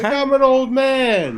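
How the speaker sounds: very high, pitched way up, drawn-out exclamation. Comparing a line to a sitcom character: Uncle Leo impression. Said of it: "sounds like Uncle Leo".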